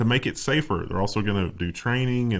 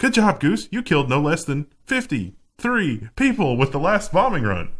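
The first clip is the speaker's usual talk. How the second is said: relentlessly upbeat, pitched-up robot assistant voice; 6 semitones higher, 4 dB louder than usual. Imagining an ai wingman praising a pilot: put-on super cheery ai voice. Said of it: "a super cheery A I voice that's like".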